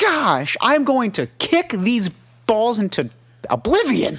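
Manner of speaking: very high, furious, angry yell, slightly cleaned up. Acting out a man who wants to yell at the referee: mock yelling at the ref. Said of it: "he wants to yell at the ref".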